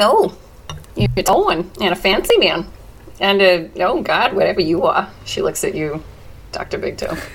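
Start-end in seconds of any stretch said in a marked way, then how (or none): 0.0-5.1 put-on New York accent, laid on, swooping pitch. Speaker, late starting a character voice, greets the others: New York accent. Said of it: "Are we in New York City?".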